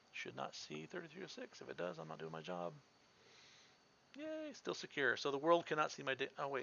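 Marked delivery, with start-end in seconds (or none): 0.2-2.8 quick, rapid, very quiet whisper under the breath. Checking whether a server is being blocked, narrating aloud: whispering. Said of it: "I don't know why I'm whispering".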